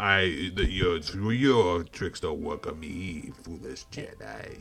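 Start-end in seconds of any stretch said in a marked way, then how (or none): 1.3-4.6 dark villain voice, raspy like a chain smoker. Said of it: "talk like they are chain smokers".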